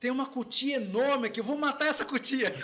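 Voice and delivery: joking, playful, high-pitched shout. A man retells calling out to his wife; retelling a shout. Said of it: "Gritei e falei assim".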